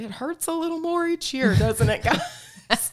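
very high, loud, rising yelled call-out. Retelling how a man walking by called out to the group: imitating someone yelling out. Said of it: "he yells out".

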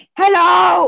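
play-acted furious yell, very loud and shrill. Retelling a late-night phone call from a livid caller: imitating a livid caller. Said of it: "this bitch was, like, livid".

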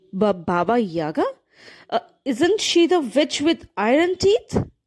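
stammered, stuttering, frightened delivery. A girl told to fetch a needle from Baba Yaga answers her stepmother; stuttering. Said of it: "She stuttered".

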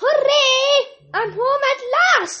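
high, joyful duckling quacking cry. A lost duckling finally reaches her mother; joyful quacking. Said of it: "quacked Mabel, leaping out of the water".

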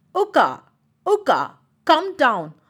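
loud yelling, calling out. Joju the elephant calls to his friend uka in the tree, shouting. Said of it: "shouted Joju".

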